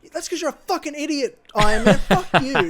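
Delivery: put-on loud, high, abusive angry yelling. Retelling how mum yelled at iron man on the tv: imitating mum yelling at the tv. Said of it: "yelling at the T V".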